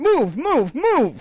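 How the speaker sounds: very high, shrill, loud yell. Friends joke about a bit at the bus stop, one acts it out: yelling. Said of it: "just start yelling at people on the street".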